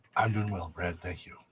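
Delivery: very quiet, low, sedate, casual, low-key delivery. Answering the greeting at the start of the podcast: very low key. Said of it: "That was very low key".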